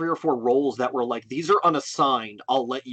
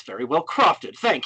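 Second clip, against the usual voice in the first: mock snark giving way to grudging gratitude. Retelling a character's reaction to a sweet present: imitating snarky yet grateful thanks. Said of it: "trying to be snarky, but he also can't help but be grateful".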